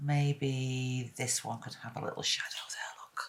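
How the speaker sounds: speaking in a whisper. Adding a little shadow under a petal while painting, whispering. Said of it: "I don't know why I whisper when I do that".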